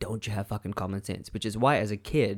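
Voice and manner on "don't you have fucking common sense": acted, quick, hushed, angry scolding tone. Speaker quotes what his mom always said in anger, imitating mom's angry scolding. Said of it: "she would say that in anger always".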